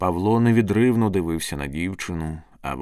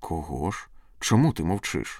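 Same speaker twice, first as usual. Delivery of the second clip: ordinary delivery, nothing marked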